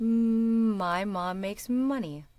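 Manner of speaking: slow sing-song with stretched M. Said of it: "sing-song speak the rest of it".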